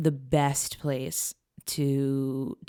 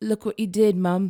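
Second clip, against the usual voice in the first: put-on British accent, higher pitched and louder; 6 semitones higher, 6 dB louder than usual. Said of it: "in her British accent".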